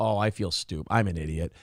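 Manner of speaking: mock very low, abashed, sheepish mumble. Speaker acts out people finding out a hoax was fake, mock-sheepish. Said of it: "They go".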